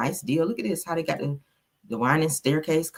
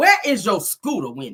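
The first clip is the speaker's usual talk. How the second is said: animated, loud put-on voice with big swoops; 4 semitones higher, 6 dB louder than usual. Addressing Wendy in an imitation: Nene Leakes voice. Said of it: "In my in my Nene Leakes voice".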